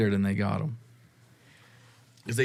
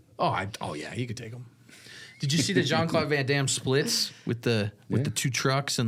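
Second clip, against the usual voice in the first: plain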